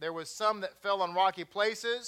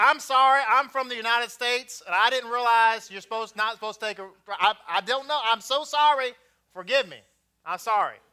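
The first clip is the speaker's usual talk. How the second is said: put-on thick, loud, homegrown Texas accent laid on thick; 3 semitones higher, 7 dB louder than usual. Apologizing and explaining he's from the United States, in a thick Texas accent. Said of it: "I pulled out my thick, homegrown, pure, true, birth-given Texas accent".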